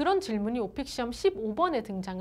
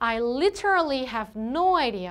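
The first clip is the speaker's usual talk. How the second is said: heavy stress on the word literally; 5 dB louder than usual. Teaching to stress words like literally in a sentence: stress on literally. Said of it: "literally 같은 표현에 좀 강세를 넣어주셔야 돼요. ... 이렇게".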